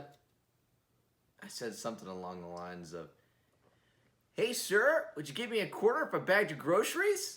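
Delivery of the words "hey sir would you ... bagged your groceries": put-on high, loud, chipper old-timey movie kid voice. Retelling what he said to a man at the grocery store, put-on chipper movie-kid voice. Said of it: "Acting like, you know, a kid off a movie".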